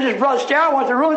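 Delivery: ordinary talk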